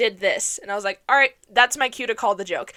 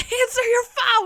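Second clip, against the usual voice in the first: mock frantic, urgent, very high scream; 12 semitones higher than usual. Recalling screaming at the laptop during a call attempt, retelling a scream. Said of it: "I'm screaming at my laptop".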